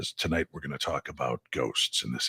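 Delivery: low, soft, raspy late-night radio host voice. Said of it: "low, raspy voice taking you through the world of the unknown".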